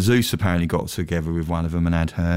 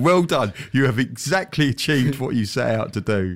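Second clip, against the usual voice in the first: encouraging, earnest, teacherly tutor voice; 6 semitones higher than usual. Recounting one's own reaction in a chat, imitating a praising tutor. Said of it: "I felt like I was a tutor going".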